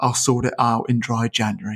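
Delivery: quiet muttering under the breath. Mocking drinkers in December, imitating them muttering a promise.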